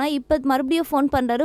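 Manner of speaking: plain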